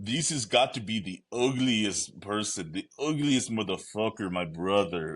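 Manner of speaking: put-on English spoken with a Brazilian accent. Recalling how Renato Moicano talks on his podcast, imitating Renato Moicano's Brazilian accent. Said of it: "It's just in his Brazilian accent".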